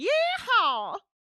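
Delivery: very loud, high, shrill yeehaw whoop. Showing how the word should be said, shouted yeehaw. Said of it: "gotta shout it like".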